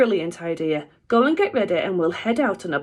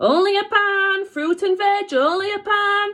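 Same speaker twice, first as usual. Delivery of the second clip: mock terrible market trader accent, very high, drawn out; 13 semitones higher than usual. Retelling the fruit-stall owners' call, Mister and Missus Marbles' shout. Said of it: "Sorry about my terrible accent there".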